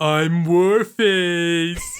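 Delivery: booming, very loud, dopey stupid voice. Voicing a game character named warface: stupid character voice. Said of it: "he has a really stupid voice".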